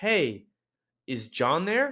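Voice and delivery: excited, slowed-down delivery. Showing how to ask for a friend: excited, a little slower. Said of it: "I'm going to say it a little bit slower".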